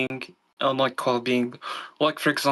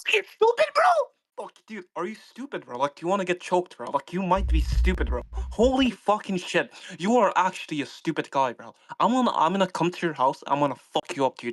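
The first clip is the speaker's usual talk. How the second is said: furious, threatening rant, high and swooping pitch; 5 semitones higher than usual. In a heated debate, one speaker turns on the other in an angry rant. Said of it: "I don't hear any of your rant".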